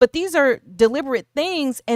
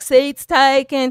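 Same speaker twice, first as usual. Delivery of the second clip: imitated country voice and accent; 3 semitones higher, 6 dB louder than usual. Retelling a bus story where everyone refuses a seat, in a put-on country accent. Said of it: "What was that country accent".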